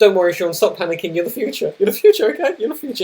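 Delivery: play-acted unsure, doubtful, self-reassuring tone. Acting out the inner voice reassuring oneself: imitating own unsure self-talk. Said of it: "in, like, an unsure manner".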